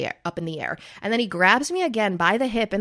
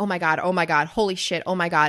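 mock panicked, freaking-out voice. Retelling panicking in the plane before a skydive: retelling own freaking out. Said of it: "can't control the stuff that comes out of my mouth when I'm freaking out".

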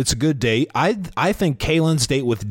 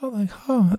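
high, airy, breathy, breath-filled voice; 8 semitones higher than usual. Retelling how a woman on a show talks: imitating a quiet breathy voice. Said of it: "her voice gets quiet".

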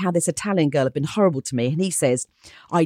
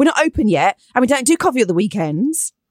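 quite aggressive, hostile, dismissive tone; 6 semitones higher than usual. Retelling how a restaurant worker spun round and spoke: imitating someone speaking aggressively. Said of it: "again, quite aggressively".

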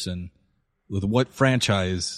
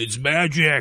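put-on drunken yell, higher pitch; 5 semitones higher than usual. Describing a favorite moment from a performance, quoting a drunk ranger: retelling a drunken yell. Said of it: "he just drunkenly just yells out".

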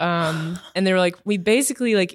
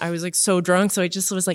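normal talking voice

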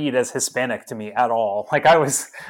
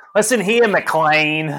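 put-on thick Chicago accent, louder; 4 dB louder than usual. Act out Dennis Franz addressing McClane in a movie, as a Dennis Franz, thick Chicago accent impression. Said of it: "thick ass Chicago accent".

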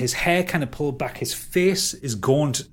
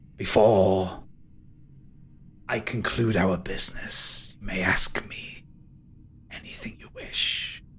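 low, otherworldly, ghostly spectre voice; 5 semitones lower than usual. A game master voices a spectre speaking to the players: spectre voice. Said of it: "is a spectre. He is... He takes form in the centre of the room as the top half of a man".

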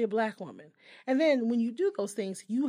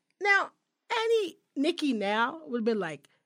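ordinary talk

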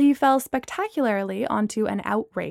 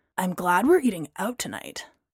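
loud stage whisper, meant to be heard; 4 semitones lower, 3 dB quieter than usual. Braylon adds to Gemma after Amanda says she was sick: loud whisper. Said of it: "in a whisper that nevertheless was heard by everyone".

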